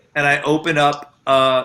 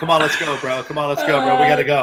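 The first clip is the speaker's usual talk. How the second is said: normal talking voice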